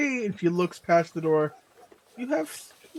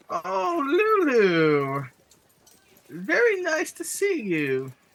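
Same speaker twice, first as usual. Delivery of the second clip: put-on frail, elderly goblin woman's voice, high and slow; 8 semitones higher than usual. Narrator voices a goblin woman greeting Lulu at her door, frail elderly goblin woman. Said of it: "frail, elderly goblin woman".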